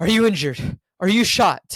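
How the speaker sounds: play-acted gentle, caring concern with panic underneath. Retelling a car scene where a man checks on a woman, caring voice. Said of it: "in a caring voice".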